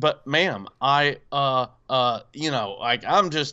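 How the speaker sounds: ordinary talk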